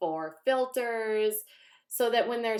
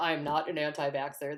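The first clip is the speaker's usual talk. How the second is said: flat, toneless put-on voice, lower pitch; 7 semitones lower, 4 dB quieter than usual. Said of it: "She's like".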